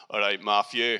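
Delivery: booming Scottish voice. Retelling how friends greet him with affectionate fighting at the door, booming scottish voice. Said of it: "I'll just hear this booming Scottish voice".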